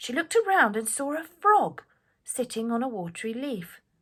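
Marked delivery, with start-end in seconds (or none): none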